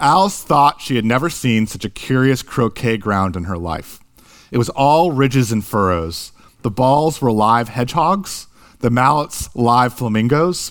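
normal talking voice

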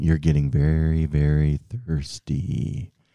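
measured, unhurried, slow, methodical hypnotist voice. Playing hypnotist for the other speaker, in a slow, methodical hypnotist voice. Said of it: "I can talk very slowly and methodically".

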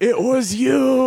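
put-on piercing, very high-pitched, shrill scream. Retelling a crowd moment when a friend shouted an accusation, retelling a scream. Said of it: "Brendo screamed".

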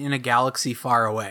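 ordinary delivery

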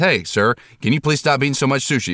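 strong, laid-on, high-pitched put-on Chinese accent. Retelling how a restaurant worker asked him to stop eating: imitating a Chinese accent. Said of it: "he said it with a really Chinese accent".

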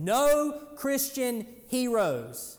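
booming, very loud, high-pitched voice. Retelling the first thing he said to the class before starting, imitating a very loud voice. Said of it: "he said in a very loud voice".

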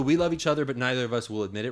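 ordinary delivery

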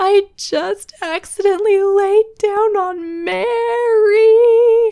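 mock very high, loud wail, Mary drawn out. Retelling what she said, upset, right before christmas: imitating someone wailing. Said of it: "basically wailing".

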